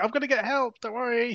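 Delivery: high yell calling out. Retelling a film character calling back to a friend: imitating someone yelling back. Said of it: "yelling up, ye-, yelling back, going".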